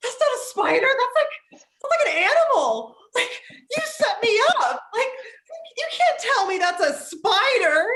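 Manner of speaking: put-on very high, breathless, hyperventilating outrage and panic. Retelling a man jumping back from a spider, the speaker is imitating hyperventilating.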